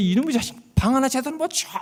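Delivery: shrill, angry shouting.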